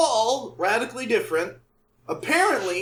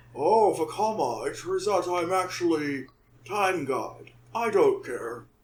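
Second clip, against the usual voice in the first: deep, low, slow, drawn-out voice; 4 semitones lower, 4 dB quieter than usual. Imitating a character admitting hidden time powers: Sidorak impression. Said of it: "How's my Sidorak impression?".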